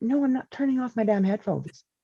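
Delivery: restrained, held-back, subdued tone. Retelling own reply while podcasting: imitating own "other people are watching" voice. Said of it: "that was my "other people are watching" voice".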